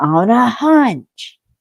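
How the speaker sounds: high, loud, sudden shouted outburst. Recapping the plot to a co-host, acting out Sterling's yell. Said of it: "then Sterling yells".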